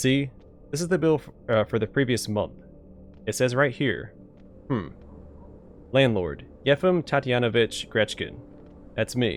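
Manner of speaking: normal talking voice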